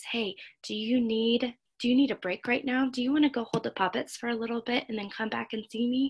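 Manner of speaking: very soft, lifted, conversational tone. Showing how to go to a child and offer choices, in a really soft voice. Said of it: "saying in a really soft voice".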